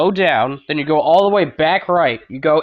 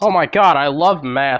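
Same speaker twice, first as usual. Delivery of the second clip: mock enthusiasm, sarcastic. Reacting to a video explaining a math puzzle, sarcastic. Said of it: "I'm being sarcastic".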